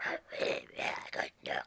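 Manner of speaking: breathy whisper with almost no sound. Showing how the voice sounded after surgery left the vocal cords paralyzed: imitating own voice after surgery. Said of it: "I sounded like this".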